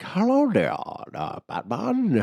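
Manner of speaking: limp, weak, swooping, overly polite villain voice. Friends discuss a Batman villain's voice; speaker imitates it, weak and soft. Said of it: "has such a pussy ass voice".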